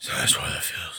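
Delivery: low, soft, growly mock voice.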